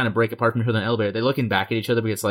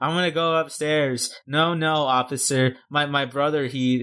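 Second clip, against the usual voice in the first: put-on drunken sobbing, higher; 4 semitones higher than usual. Retelling a film's opening scene where she gets drunk: imitating drunken fake crying. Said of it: "she's acting like she's crying".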